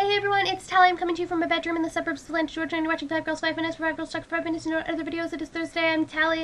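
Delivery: very fast. Introducing herself on her video show, speaking very fast. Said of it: "I said that really fast".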